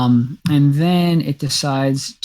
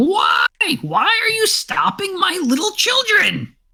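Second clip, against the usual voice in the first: very high, sing-song, swooping creature voice. Voicing a very large creature speaking to the players: large creature's voice. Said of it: "its voice going".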